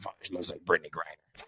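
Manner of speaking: soft, low-key, snide mutter under the breath. Retelling what Roger said before a brawl: imitating Roger muttering under his breath. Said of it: "under his breath".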